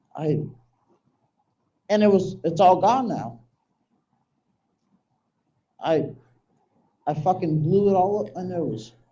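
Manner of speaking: on the verge of tears, fighting them back. Telling listeners how you had everything in your twenties and lost it, about to cry. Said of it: "I'm about to cry".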